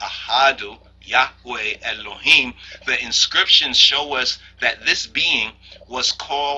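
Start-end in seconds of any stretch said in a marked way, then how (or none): none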